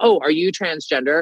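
normal talking voice

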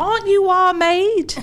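put-on thick Scouse accent, very high and loud. Retelling how Cookie went over to the table, in Cookie's thick Liverpudlian accent. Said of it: "say in all of her thick Liverpudlian accent".

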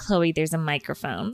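ordinary talk, nothing marked

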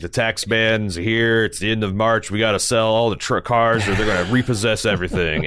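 acted, flat, straight-faced car-salesman pitch. Recalling a car dealer's pitch from childhood, the speaker does a deadpan Ed Martin impression. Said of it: "he's just like deadpan".

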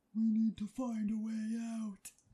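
very deep voice. Trying a new voice for the recording: really deep voice. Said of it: "a really deep voice one".

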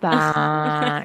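acted flat vocal fry. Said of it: "it's a vocal fry at the end".

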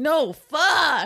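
loud put-on six-year-old child's yell. Speaker retells a six-year-old correcting them: retelling a kid yelling. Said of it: "He's like yelling at me".

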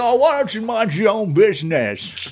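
put-on high, loud old man voice. Retelling a reply to a neighbor who stands up and speaks, use a Jimmy Stewart old man voice. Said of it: "he had an old man voice".

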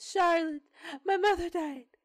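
very high-pitched put-on British accent. Acting out a woman calling Charlotte, imitating a British accent. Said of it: "I guess she's British".

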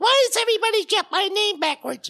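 loud, very high, squeaky puppet chicken voice. Acting out the puppet Little Chicken complaining: Little Chicken character voice. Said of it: "I never expected you to be doing voices".

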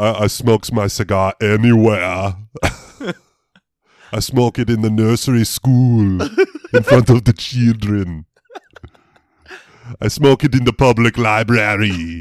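slow, drawn-out, ballsy, boastful bravado. Imitating an actor's interview about smoking cigars: Arnold Schwarzenegger impression. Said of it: "He's like".

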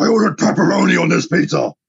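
put-on gruff superhero voice.

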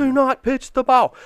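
wild, very high, animated screaming. A dad recalls telling his daughter on the mound not to pitch: retelling his own scream. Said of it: "And I'm screaming, animated, like nuts".

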